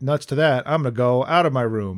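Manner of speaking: ordinary delivery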